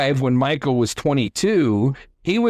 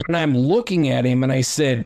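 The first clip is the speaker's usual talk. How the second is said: usual speaking voice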